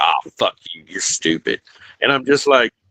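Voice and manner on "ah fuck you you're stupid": blunt, offhand, throwaway taunting tone. Imitating a commenter called a troll: imitating Christopher trolling. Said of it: "he'll sit over in days and just be like".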